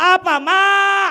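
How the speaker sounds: yelling, high-pitched and loud.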